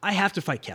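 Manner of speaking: ordinary talk, nothing marked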